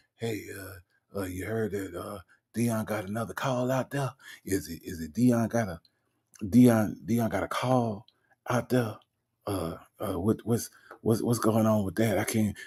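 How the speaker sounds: secretive, hushed, stammering half-whisper. Imitating the caller asking about Dion's call: imitating Nesto half-whispering. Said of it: "So he's like".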